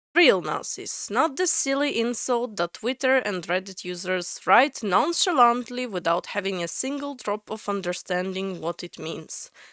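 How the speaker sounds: ordinary talk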